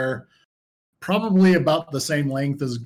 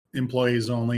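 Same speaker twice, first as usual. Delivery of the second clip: normal talking voice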